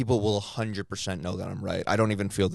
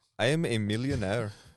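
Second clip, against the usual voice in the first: put-on Indian accent, boastful tone. Friends trading accent attempts, one doing an Indian accent. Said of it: "Can you do an Indian accent?".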